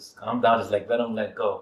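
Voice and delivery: ordinary talk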